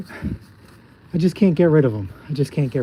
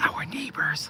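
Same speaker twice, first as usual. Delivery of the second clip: soft, hushed whisper. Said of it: "I'm gonna whisper".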